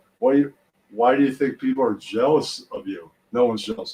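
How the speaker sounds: plain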